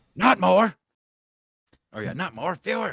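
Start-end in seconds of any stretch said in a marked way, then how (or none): 0.2-0.8 put-on yelling, higher and louder. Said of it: "he started yelling at people".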